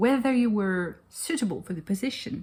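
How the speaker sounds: put-on old-fashioned posh accent. Repeating a phrase he admires, in an old posh accent. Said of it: "I do love this old posh accent".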